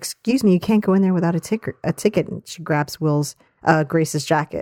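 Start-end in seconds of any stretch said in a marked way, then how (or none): 0.0-2.3 put-on voice of a young usher girl. Retelling a sitcom scene, imitating a young usher girl. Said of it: "a young usher girl who's like".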